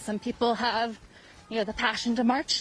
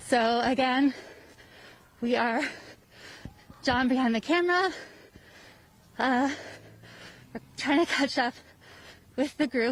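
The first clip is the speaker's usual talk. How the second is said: out of breath, higher pitch; 2 semitones higher than usual. Speaker filming on the move, trying to catch up with the group, out of breath. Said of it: "because I'm out of breath".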